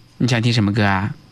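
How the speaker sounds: ordinary delivery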